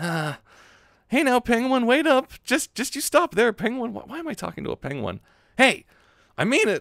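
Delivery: very high voice with an edge at the back. Voicing Shinji as he chases after a penguin, higher voice with an edge. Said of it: "I'll do a bit of my higher voice with a bit of edge in the back".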